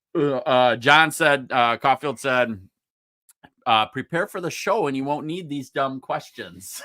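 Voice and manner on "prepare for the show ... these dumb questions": ordinary talk, nothing marked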